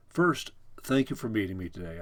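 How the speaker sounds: ordinary delivery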